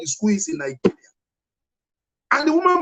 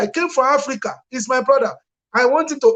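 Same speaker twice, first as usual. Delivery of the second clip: ordinary talk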